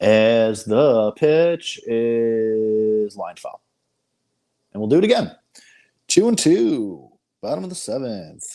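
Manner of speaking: loud put-on bad sports announcer voice, "is" stretched. Speaker calls a baseball pitch count play-by-play, in a bad sports broadcaster voice. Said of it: "This is my broadcaster voice".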